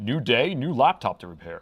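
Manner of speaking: broadcast-style announcer voice. Repair video host showing the voice he uses on his shorts, announcer voice. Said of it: "in my announcer voice".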